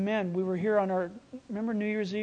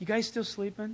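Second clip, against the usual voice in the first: mock gentle, unscolding, soft, peaceful tone; 5 dB quieter than usual. Retelling him waking Peter and the others, acting out a peaceful, gentle question. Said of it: "there's peace in his voice. ... There's no rebuke there".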